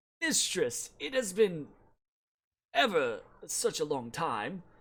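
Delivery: plaintive, mournful, sorrowful lamenting voice. Narrating a scene where a tree speaks to Willow, in a plaintive voice. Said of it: "in a very almost kind of like plaintive voice say".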